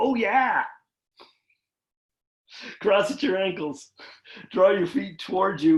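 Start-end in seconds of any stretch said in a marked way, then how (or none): 0.0-0.6 booming mascot voice on "oh yeah", higher. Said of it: "I just sounded like the Kool-Aid guy".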